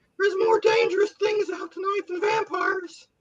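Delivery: put-on nerdy teen voice. Redelivering a movie line for laughs: nerdy teenager from The Simpsons. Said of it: "like a teenager from The Simpsons saying it".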